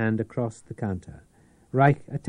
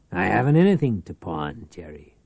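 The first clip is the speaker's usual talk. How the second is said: plain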